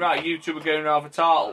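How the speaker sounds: ordinary delivery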